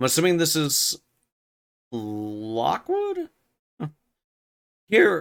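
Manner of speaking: voice breaking, cracking on the word here. Speaker reading a novel aloud, voice cracking. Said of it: "my voice is cracking".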